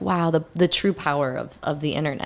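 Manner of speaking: ordinary talk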